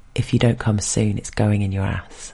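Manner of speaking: plain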